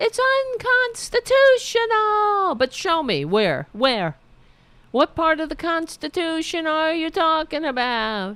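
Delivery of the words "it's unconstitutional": put-on, shrill, very high-pitched yelling. Mocking a pictured politician screaming outside: imitating Marjorie Taylor Greene yelling. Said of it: "Is that what you're yelling?".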